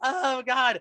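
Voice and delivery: very high, squeaky, mortified voice. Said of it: "Jon Lovitz is so mortified".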